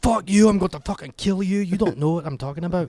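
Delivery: angry, high-pitched Scottish accent. Showing how an over-the-top Scottish accent sounds when mad: mad Scottish accent.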